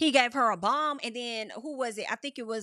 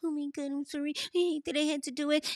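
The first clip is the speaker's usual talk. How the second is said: put-on weepy, fake crying voice; 4 semitones higher than usual. Mimicking Mickey apologizing to Jimmy: imitating Mickey's fake crying. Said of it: "trying to put on for Jimmy".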